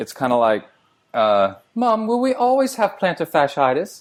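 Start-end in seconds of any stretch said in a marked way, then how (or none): 1.7-4.0 put-on British accent, pitched very high. Joking, playing a child speaking to their mom in a british accent. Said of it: "That is an excellent British accent".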